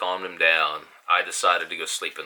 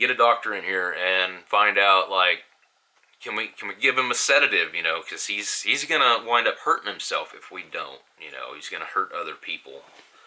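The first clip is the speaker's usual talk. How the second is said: normal talking voice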